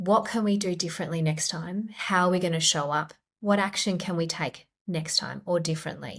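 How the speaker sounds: kind, supportive, self-compassionate tone. Showing how an inner critic's message sounds when rewritten compassionately: compassionate tone. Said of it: "turned it into a compassionate message".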